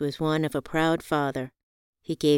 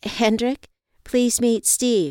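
halting, stammering speech, higher pitch; 7 semitones higher, 3 dB louder than usual. Reading a story, the narrator introduces Hendrick to Steve, stammering. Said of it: "I stammered".

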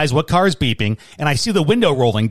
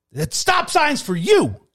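put-on scream, shrill, voice very high; 14 semitones higher than usual. Retelling an argument at a stop sign, quoting the other man's reply: retelling a scream. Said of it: "he screams back at me".

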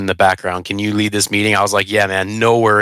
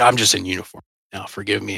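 mock whisper, quieter; 5 dB quieter than usual. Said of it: "whispered in my ear".

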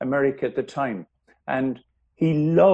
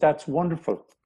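plain

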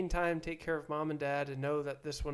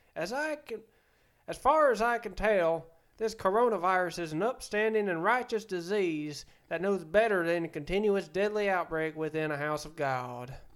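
loud put-on Southern US accent; 3 semitones higher, 6 dB louder than usual. Reading aloud a quote said during church, in a southern accent. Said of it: "never ever do the Southern accent ever again".

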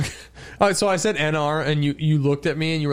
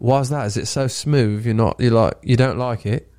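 fake English accent, lower; 3 semitones lower than usual. After a co-host complains about it, a speaker keeps going in a fake English accent. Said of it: "So what region is that from?".

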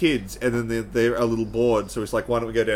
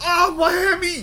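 put-on shrill, high-pitched yell in an Australian accent; 4 dB louder than usual. Retelling a show where a dad fake trips, he does an Aussie accent yell. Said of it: "hear an Aussie accent yell".

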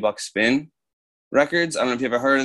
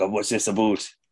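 put-on Canadian accent; 3 semitones lower, 3 dB quieter than usual. Imitating a friend's accent while joking about Canadians: imitating Dave's Canadian accent. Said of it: "Dave's got a bit of an accent".

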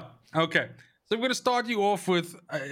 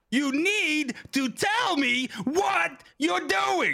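very high, slow, each word pair stepped up; 13 semitones higher than usual. Showing what a vocal coach teaches: Samuel L. Jackson voice. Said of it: "Samuel L. Jackson's thing is".

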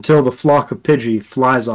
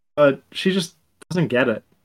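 ordinary delivery

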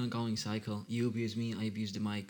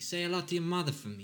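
put-on tough-guy mobster voice, pitched up; 8 semitones higher than usual. Playing with a line that sends regards to someone's mother: mobster voice. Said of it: "I'm just all like fucking like a mobster".

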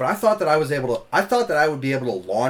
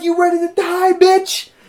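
very high, very loud screaming through laughter; 8 dB louder than usual. Retelling choking a dude while everyone laughed, retelling a laughing scream. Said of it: "but I'm screaming, laughing".

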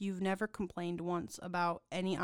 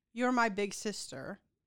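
plain

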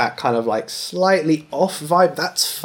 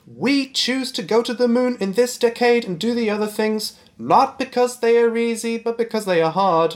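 very high, distinctive speech pitch; 9 semitones higher than usual. Quoting a famous moon speech, copying its particular pitch: imitating JFK's particular pitch. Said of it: "he says it with a really particular pitch".

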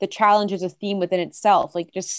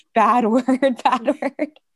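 mock scolding mother voice, higher pitch; 4 semitones higher, 3 dB louder than usual. Comparing friends' reaction to a mom hearing swearing: imitating a scolding mom. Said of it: "when you would swear in front of your mom and she'd be like".

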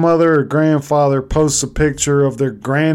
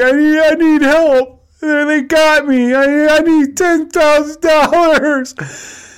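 very high, put-on sobbing, pleading fake crying; 12 semitones higher than usual. Speaker describes a scam call to a grandparent: imitating a woman fake-crying. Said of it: "She'll act like she's crying".

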